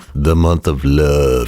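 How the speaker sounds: deep voice. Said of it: "You have to say it with a deep voice".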